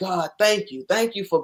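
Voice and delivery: re-enacted, acted-out crying, tearful voice. Recalling running and crying while thanking God, retelling a tearful prayer. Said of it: "I'm running and I'm crying".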